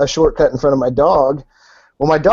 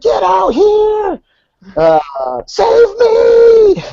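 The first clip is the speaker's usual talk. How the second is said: put-on very high, slow swooping scream, "me" stretched; 4 dB louder than usual. Retelling being trapped under a pony, calling for help: retelling a scream for help. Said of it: "screaming for her".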